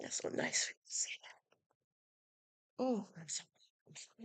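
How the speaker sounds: choked-up, hushed and breathy, struggling for composure. Thanked warmly by the others, the speaker answers, choked up. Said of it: "I'm getting all messed up".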